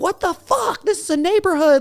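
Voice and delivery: mock shrill, furious scream, very high. Retelling pulling up next to a speeding driver, the speaker reenacts screaming at a driver. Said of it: "just start screaming like".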